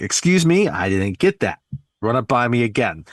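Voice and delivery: New York accent, full of sass, acted out. Retelling a movie scene, imitating Ann's New York sass. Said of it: "with her, you know, New York type of attitude and sass".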